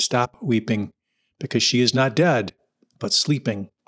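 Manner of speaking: plain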